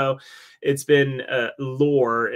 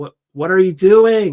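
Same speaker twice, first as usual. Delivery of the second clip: very loud, high, rising shout; 6 semitones higher, 11 dB louder than usual. Speaker retells shouting at his brother during a district final, retelling a shout. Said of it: "And I just shouted at him".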